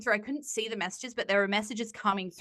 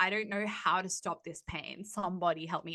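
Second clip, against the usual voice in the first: mock vulnerable pleading tone, quieter; 2 semitones lower, 4 dB quieter than usual. Retelling her own Instagram posts after a breakup: imitating own past vulnerable plea. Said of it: "so sweet and kind and loving and vulnerable".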